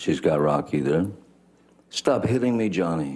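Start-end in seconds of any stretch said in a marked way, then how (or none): 1.9-3.2 high-pitched, freaked-out, upset, distressed cry. Recounting hearing a woman scream from twenty feet away; imitating Heard's high upset scream. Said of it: "she's screaming in in her best um, freaked out, upset voice, high pitched".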